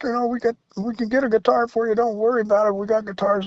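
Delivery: high, urgent, loud calling out.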